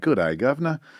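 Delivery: attempted English accent that comes out Australian. Joking about dropping his trousers and greeting someone: attempted British accent sliding Aussie. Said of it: "every time I try to do English, it comes out Aussie".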